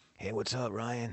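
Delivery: soft, slow, unhurried raspy voice. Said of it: "he has that raspy voice".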